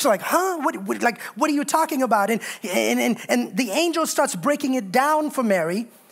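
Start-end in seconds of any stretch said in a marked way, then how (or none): 0.2-2.0 put-on confused teenage girl voice, higher. Retelling how a teenage girl reacts to an angel: acting out Mary's confusion. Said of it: "Mary's super confused".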